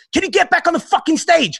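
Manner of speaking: shrill, very high, harsh shouting. Retelling the director brother shouting during a music video shoot: imitating brother shouting. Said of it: "my brother wasn't shouting at me".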